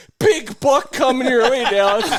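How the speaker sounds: shrill, high-pitched holler at full volume. Retelling what the other person yelled after shooting at a buck; retelling a yell. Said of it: "shoot at it and then yell".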